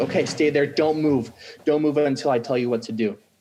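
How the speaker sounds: mock firm, commanding squad-leader voice. Retelling a firefight, he re-enacts what he told five of his men: retelling his own yelling. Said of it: "I'm yelling at all 5 of these guys".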